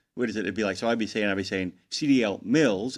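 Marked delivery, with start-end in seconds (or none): 1.9-3.0 very slow, mocking, sarcastic air-quote tone. Showing what is called the air quote tone: sarcastic air-quote tone. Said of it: "I call it the air quote tone".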